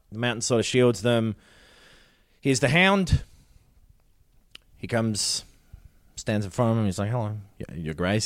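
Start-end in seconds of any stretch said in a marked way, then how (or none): 7.1-8.3 put-on sarcastic tone, quieter. Retelling a scene where a character greets a queen: imitating a sarcastic greeting. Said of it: "he says sarcastically".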